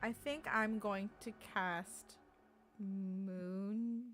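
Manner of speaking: slow, deliberate delivery. A player reads spell information while declaring a spell, speaking very slowly. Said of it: "I'm saying this very slowly".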